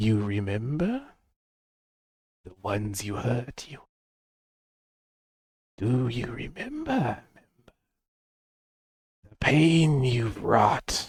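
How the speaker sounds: soft, hushed half-whisper with no voice. Voicing an unseen speaker who half-whispers to a player character: half-whispering voice. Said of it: "very specifically in whispers".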